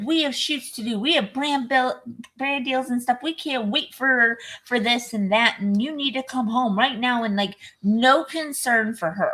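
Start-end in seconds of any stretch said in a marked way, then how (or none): 0.0-7.2 exasperated, irritated berating, held in check. Describing a movie character at the film's beginning, retelling someone yelling at her. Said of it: "he's like yelling at her".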